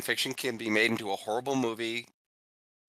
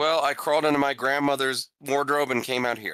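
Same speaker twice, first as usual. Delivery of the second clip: normal talking voice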